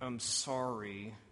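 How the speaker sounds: muttered through clenched teeth. Illustrating a child walked over by a parent to apologize: mumbled between gritted teeth. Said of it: "to mumble between gritted teeth".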